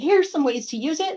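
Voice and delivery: ordinary talk, nothing marked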